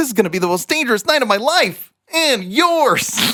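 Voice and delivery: very high superhero voice. Guest demonstrating his ride voiceover line, Spider-Man voice. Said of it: "may hear Spider-Man say".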